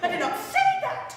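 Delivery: high, loud, furious yelling outburst. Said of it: "I am furious!".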